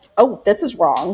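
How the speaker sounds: ordinary delivery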